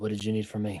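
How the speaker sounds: quiet, hushed, low speech. Leaning in closer to him, a role-play character asks something, quiet and hushed. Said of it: "I get real quiet".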